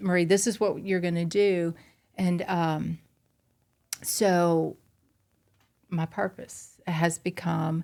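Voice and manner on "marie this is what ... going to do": usual speaking voice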